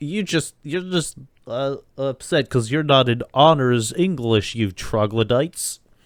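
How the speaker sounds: know-it-all nerdy cartoon kid voice. Acting out the insult a cartoon nerd gives the jocks; nerd voice. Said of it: "Do you like my nerd voice?".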